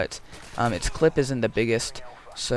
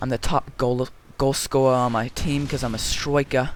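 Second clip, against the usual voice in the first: put-on British accent, striker said as stroika; 2 semitones higher, 4 dB louder than usual. Acting out a british player talking about being a striker, put-on british accent. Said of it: "I'm not British, and, you know, I don't know how good that accent was".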